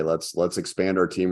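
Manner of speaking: ordinary delivery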